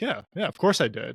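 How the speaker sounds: put-on smug voice. Retelling an answer to a reporter after the game: smug Matt LaFleur impression. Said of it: "that smug smile on his face".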